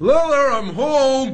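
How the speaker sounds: very high, loud shouted yell. Arriving home three hours late, he calls out from the door: yelling. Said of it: "No need to yell!".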